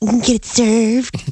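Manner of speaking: creepy, leering, lecherous tone. Insisting the phrase be said right, with a leering, pervy delivery. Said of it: "You got to say it like that, like a perv".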